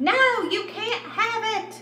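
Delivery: piercing, very high-pitched scream. [name], with dumbfounded Jonah beside her, suddenly begins to scream: screaming. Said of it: "began to scream".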